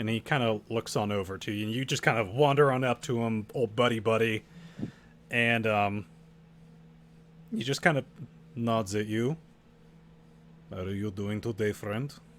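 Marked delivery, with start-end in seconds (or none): 10.7-12.1 put-on botched accent drifting into Russian. Narrator voicing a man who nods at the listener in greeting, accent slipping into Russian. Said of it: "You went into Russian".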